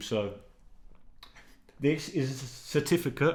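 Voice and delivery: stammering speech. Showing a university certificate on YouTube, stuttering. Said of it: "Sorry, I'm stuttering".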